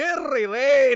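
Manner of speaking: shrill, very loud, put-on Scottish accent. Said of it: "His Scottish fucking voice".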